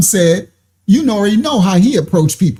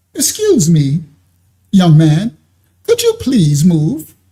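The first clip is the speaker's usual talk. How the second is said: put-on courteous, gentle and polite tone. Playing out the testimony, the speaker acts out how he first asked; mock-polite request. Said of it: "you see how he said nice at first".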